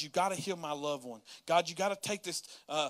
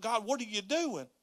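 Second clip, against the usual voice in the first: play-acted, held-back, contained yell; 5 semitones higher than usual. Speaker recounts being called to leave and start again: retelling yelling at God. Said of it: "i'm yelling at god".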